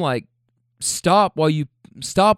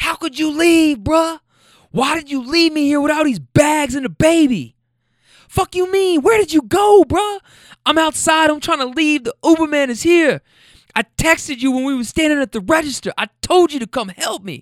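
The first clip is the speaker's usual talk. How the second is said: put-on, very high-pitched, literal screaming rant; 11 semitones higher, 4 dB louder than usual. Retelling a scene in a Walmart, the speaker imitates a woman screaming at someone who left her. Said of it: "She's screaming, literally screaming".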